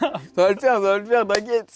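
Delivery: put-on loud, easygoing, drunk-sounding voice. Imitating the other speaker, who sounded like a drunk guy: imitating a drunk-sounding guy. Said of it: "On dirait un mec bourré".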